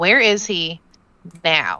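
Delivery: furious, deliberate, slow, very angry. Voicing a character who aims at someone and demands an answer: very angry. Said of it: "I will say very angrily".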